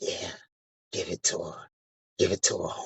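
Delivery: breathy, very close-up whisper. Retelling a stranger at a resort leaning in: imitating someone whispering. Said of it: "somebody whispering in my ear like".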